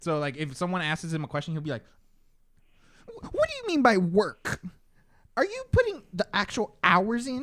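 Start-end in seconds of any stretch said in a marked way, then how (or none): 3.1-7.4 put-on squeaky voice, higher and louder. Showing how people on TikTok impersonate Gary Vee: imitating Gary Vee's squeaky voice. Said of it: "he has a really squeaky voice, so everybody impersonates that".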